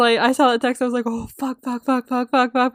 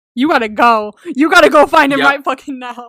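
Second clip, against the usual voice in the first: mock-worried outburst, louder; 5 dB louder than usual. Recounting reading a character's text, retelling a worried reaction. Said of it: "I was very deeply worried about this text".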